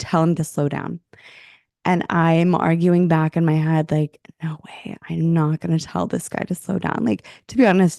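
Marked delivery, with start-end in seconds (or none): none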